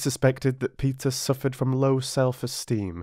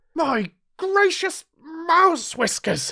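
frantic outcry, very high in pitch; 4 dB louder than usual. Reading a story aloud, a character in a surge of fear, crying out frantically. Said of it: "Cried Eddie frantically".

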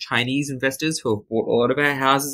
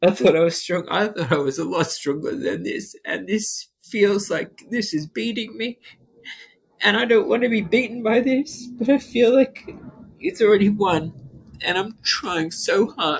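crying while talking, much higher pitch; 7 semitones higher than usual. In an interview, the speaker breaks down, crying while talking. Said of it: "I feel so pathetic for crying about this".

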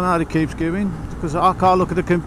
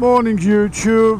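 loud, plummy upper-class put-on posh accent; 4 semitones higher, 5 dB louder than usual. Greeting YouTube in the morning, talking in a posh voice. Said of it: "this is the Goose talking in my posh voice".

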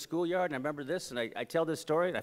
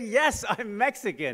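put-on, very proud, raised voice; 6 semitones higher, 6 dB louder than usual. Retelling own answer to a teacher's question: imitating saying it proudly. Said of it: "very proudly".

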